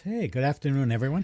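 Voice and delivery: happy, cheerful, upbeat. Speaker greets everyone after being introduced, happy and upbeat. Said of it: "You sound happy".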